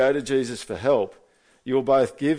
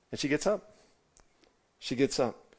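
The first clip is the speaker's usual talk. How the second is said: ordinary talk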